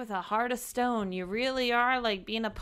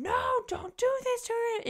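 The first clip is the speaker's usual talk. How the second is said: put-on scream, very high-pitched; 14 semitones higher than usual. Retelling a book scene where Tamlin screams: imitating someone screaming. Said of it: "Tamlin screams".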